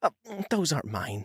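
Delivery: put-on high, earnest, super sincere, deeply concerned tone. Reading a story aloud, voicing a woman denying the dead cats: super sincere and concerned voice. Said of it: "in a super sincere and concerned voice".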